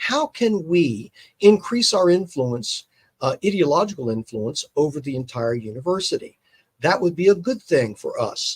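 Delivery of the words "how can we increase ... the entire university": ordinary delivery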